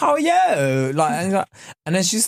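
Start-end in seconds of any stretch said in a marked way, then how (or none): 0.0-0.9 put-on, very high, pitched-up Cockney twang. Retelling what a chatty masseuse said: imitating a Cockney twang. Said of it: "Cockney twang to her voice".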